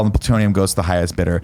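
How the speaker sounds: plain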